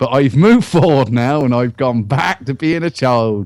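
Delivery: put-on northern English accent.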